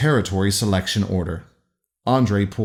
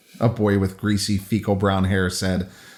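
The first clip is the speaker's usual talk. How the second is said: ordinary delivery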